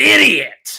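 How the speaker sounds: loud, high-pitched, comic blurted outburst. Retelling how a mother does a Will Ferrell impression. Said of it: "her impression of Will Ferrell is".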